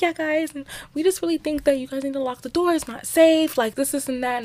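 put-on prissy voice. Retelling what a girl said about locking the door: imitating a prissy voice. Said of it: "she's very, like, prissy, like, she was like".

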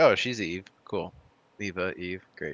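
ordinary talk

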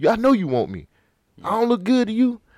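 put-on pushy, aggressive voice. Retelling how a man pressed a woman to date him: imitating an aggressive come-on. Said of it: "He ain't giving her no time".

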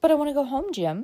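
serious, sincere, earnest tone. A girl, led along by a staggering Jim, speaks to him, earnest. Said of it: "Her tone of laughing protest changed to one of earnestness".

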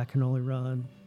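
normal talking voice

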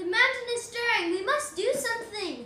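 calling out loudly, yelling. Playing a character, calling out to the gathered town elders, yelling. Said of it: "I yell".

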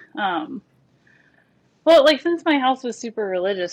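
talking short of air, winded. Talking with Andy on a podcast, out of breath. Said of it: "I'm getting a lot out of breath".

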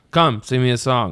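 put-on bored voice. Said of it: "he's bored".

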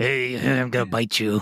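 silly, low, playful little monster voice. Showing how a stapler remover talks like a little monster: little monster voice. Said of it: "it looks like a little monster".

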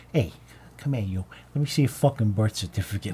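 low, aggressive, pushy, over-the-top Italian tough guy. Recalling a skit as a dojo owner, in an over-the-top Italian guy voice. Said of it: "like over the top Italian guy".

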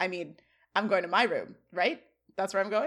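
ordinary talk

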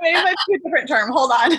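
high-pitched, playful mock double-take.

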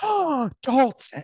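high, loud, slow, stretched-out disapproving call.

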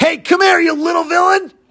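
high, loud screaming yell. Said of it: "and he screams".

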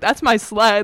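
loud, cheeky, confrontational, sassy tone. Retelling a confrontation with an eight-year-old kid: imitating a sassy kid. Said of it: "kinda, like, sassy with us".

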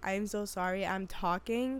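ordinary talk

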